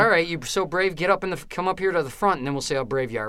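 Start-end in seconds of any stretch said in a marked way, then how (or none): none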